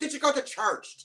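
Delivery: very high, exaggerated, terrible fake Irish accent. Describing voice actors at a St. Patrick's Day audition: terrible fake Irish accent. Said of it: "starts doing an Irish accent".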